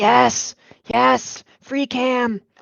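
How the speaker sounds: stage whisper, very slow and drawn out. Imagining a colleague's reaction to a question: imitating someone whispering. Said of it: "whispering into his microphone".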